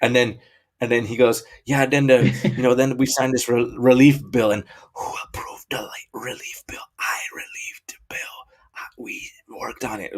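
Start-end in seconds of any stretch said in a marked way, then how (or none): 1.6-10.2 put-on creepy whisper. Retelling a speech where someone leans into the mic: imitating a creepy whisper. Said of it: "whispering into the mic".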